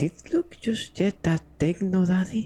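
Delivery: whispered in a put-on character voice. Voicing a character whispering in another character's ear: whispering in character. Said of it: "I want to whisper in Emory's ear".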